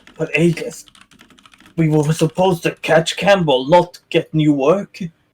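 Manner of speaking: in a whisper. A player voices their character Axe speaking to Aegis as they leave: whispering. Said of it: "Axe is gonna whisper".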